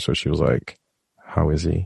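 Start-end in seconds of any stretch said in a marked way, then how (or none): 1.2-1.9 put-on weak, faint whisper. Retelling a hospital visit, quoting the wife: imitating a weak whisper. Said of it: "she could barely whisper".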